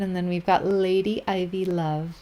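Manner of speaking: normal talking voice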